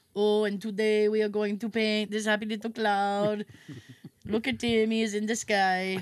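slow, put-on German accent, laid on. Describing the TV painter before Bob Ross, imitating Bill Alexander's German accent. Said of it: "little bald German guy".

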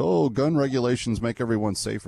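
ordinary delivery

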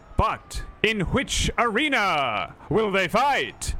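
loud, slow royal voice.

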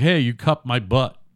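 plain

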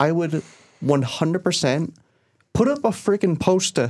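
slipping into Boston accent. A speaker hoping to get into animation slips into a Boston accent. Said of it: "Why did I just go, like, a Ultra poster. Boston?".

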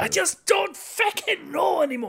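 loud, very high, at-wit's-end outburst. You tell someone they can do him when he doesn't know anymore: loud Tommy Tiernan impression. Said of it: "You can do loud Tommy Tiernan".

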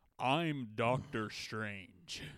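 put-on very pronounced American accent, every word clearly pronounced. Imitating Benedict Cumberbatch's American accent in Doctor Strange. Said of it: "Benedict Cumberbatch's American accent in Doctor Strange".

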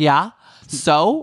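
loud, defiant brush-off, thrown back. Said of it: "She's like".

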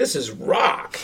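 acted, all fired-up, excited delivery. Retelling a brother's reaction at a concert: imitating brother's excitement. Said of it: "he was really excited".

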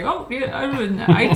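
put-on thick Indian accent. Speaker retells an office phone call answered in a very thick Indian accent. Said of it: "this very, very thick Indian accent comes on".

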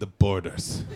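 put-on disdainful tone. Repeating how the audience just said it, imitating a disdainful tone. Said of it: "say it with such disdain".

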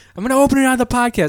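put-on screaming. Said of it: "You're screaming at her".

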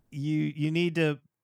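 ordinary talk

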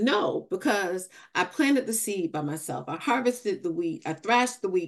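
ordinary talk

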